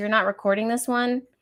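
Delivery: ordinary delivery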